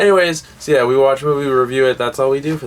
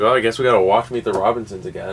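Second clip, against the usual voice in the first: ordinary talk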